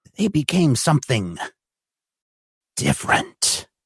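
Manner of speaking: hushed, drawn-down ghost-story storytelling voice. A storyteller tells a tale as candles flicker on the table: lowered voice. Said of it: "he lowers his voice".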